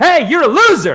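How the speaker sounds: high, loud, hyped-up screaming rant.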